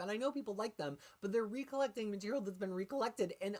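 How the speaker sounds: exasperated voice cracking. Speaker venting mid-rant, saying it makes them crazy, voice cracking. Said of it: "my voice is cracking".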